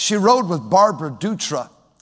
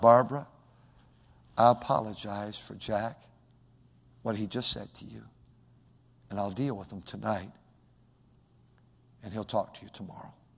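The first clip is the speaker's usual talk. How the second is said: very soft, very quiet, hushed, firm-mannered tone; 9 semitones lower, 12 dB quieter than usual. Retelling a mother apologizing to her friend Barbara for her son: imitating mother speaking very quietly. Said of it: "my mother got very quiet and said".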